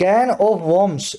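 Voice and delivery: phrase said very slowly and deliberately.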